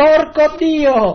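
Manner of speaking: very high, shrill, exasperated shout. Recalling opening the window toward the building opposite: retelling a shout out the window. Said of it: "la apro e urlo al palazzo di fronte".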